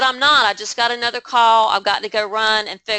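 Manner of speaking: ordinary delivery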